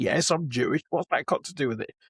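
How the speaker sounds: normal talking voice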